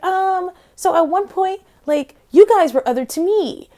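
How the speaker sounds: everyday speaking voice, high-pitched. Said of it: "high pitched".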